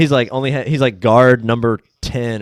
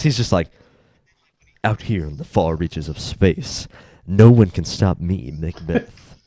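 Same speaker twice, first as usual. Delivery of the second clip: put-on grizzled, mature, gravelly voice, much lower pitch; 5 semitones lower than usual. Describing Bobby acting Macbeth, the speaker is imitating Bobby's deep grizzled voice. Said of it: "a deep, like super uh, grizzled, like mature voice".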